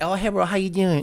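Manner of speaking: put-on Chinese accent. Acting out a talking AI doll for a joke: put-on Chinese accent. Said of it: "and it gives you the accent".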